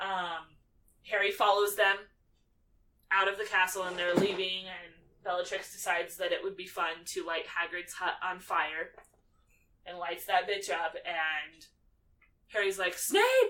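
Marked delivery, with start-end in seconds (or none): 13.0-13.5 loud, high-pitched yelling. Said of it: "he's yelling after him".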